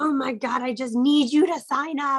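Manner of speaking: needy, begging voice. Imitating a seller who pushes a sign-up: imitating a desperate seller. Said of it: "you sound desperate".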